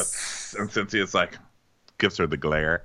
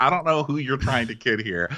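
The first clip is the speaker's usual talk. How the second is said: normal talking voice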